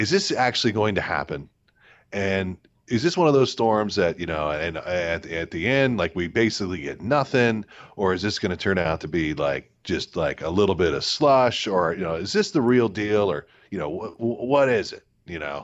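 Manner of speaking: ordinary delivery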